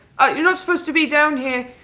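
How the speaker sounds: high-pitched elf character voice. Voicing a worker who spots a player character: voicing an elven worker. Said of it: "this elven guy runs towards you like".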